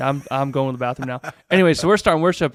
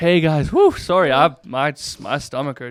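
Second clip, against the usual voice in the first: obviously acted, put-on sick voice.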